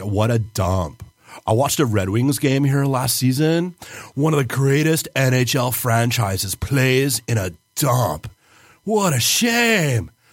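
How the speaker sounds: put-on California accent. Recounting watching a Red Wings game at this arena, California accent. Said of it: "So I just go California".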